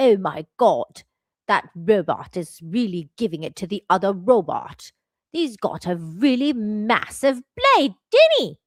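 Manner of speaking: put-on British accent in a robot voice. Imagining how british people would comment on a robot fight, british accent. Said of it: "so funny because of their accent".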